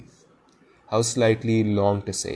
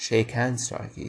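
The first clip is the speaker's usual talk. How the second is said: ordinary delivery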